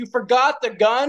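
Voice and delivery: disbelieving tone.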